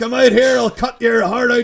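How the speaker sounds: put-on high, loud, belted Belfast accent. Retelling an actor's movie line, imitating Ron Perlman's Belfast accent. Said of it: "doing a Belfast accent as well".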